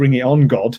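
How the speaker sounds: ordinary talk, nothing marked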